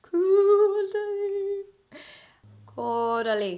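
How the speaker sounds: Irish accent, very high pitch. Trying to pronounce a French skincare brand name, accidental Irish accent. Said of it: "Did I have an Irish accent all of a sudden?".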